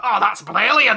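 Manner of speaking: booming, belted cartoon-character exclamation. Acting out a cartoon duck picking up coins: Scrooge McDuck voice. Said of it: "Scrooge McDuck picked them up and was like".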